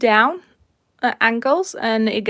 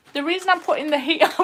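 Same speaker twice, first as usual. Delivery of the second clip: cracking up laughing, pitched-up talk; 7 semitones higher than usual. Explaining why the heat goes on: laughing while talking. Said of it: "we're still laughing about it".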